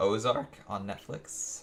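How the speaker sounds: voice breaking. Podcast host sharing the show they've been watching, voice cracks. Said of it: "voice crack and all".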